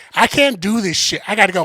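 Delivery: put-on loud, complaining tone. Retelling a friend leaving a comedy show, imitating her saying it loudly. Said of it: "she said that shit loud".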